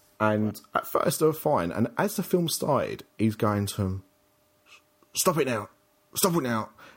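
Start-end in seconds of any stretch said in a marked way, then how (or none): 5.2-6.7 loud stage whisper. Retelling a man at the cinema telling a teen off, loud stage whisper. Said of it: "clearly not doing it under his breath".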